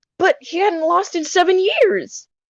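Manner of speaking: cracking, breaking voice. Reading a game character's courtroom line aloud, voice cracking. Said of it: "that was a voice crack".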